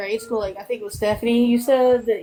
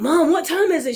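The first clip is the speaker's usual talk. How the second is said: frantic, high-pitched, panicked delivery; 6 semitones higher than usual. Retelling waking up late and asking Mom the time: imitating own past panic. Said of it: "in a complete panic".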